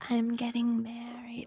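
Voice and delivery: high, spacey, oblivious, self-centered airhead voice. Mocking a film character who keeps talking about getting married: imitating the sister's out-to-lunch way of talking. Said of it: "she talks like this".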